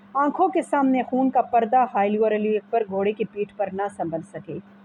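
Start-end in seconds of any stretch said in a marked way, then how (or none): none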